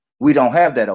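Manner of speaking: condescending, patronizing, superior, talking-down tone. Retelling a remark about Tupperware: imitating Jedi's condescending tone. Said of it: "Jedi was being condescending and said".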